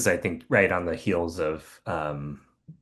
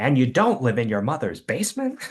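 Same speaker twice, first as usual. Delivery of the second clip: really happy, pitched-up voice; 7 semitones higher than usual. Imagining a guest insulting the podcast hosts: Conan O'Brien impression. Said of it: "He's like".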